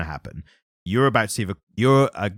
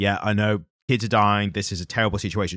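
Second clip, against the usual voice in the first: efficient, hurried, fast sympathetic tone. Acting out a comic character's line to the kids: imitating a fast, efficient understanding tone. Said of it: "very understanding, but in a very, um, efficiently fast way".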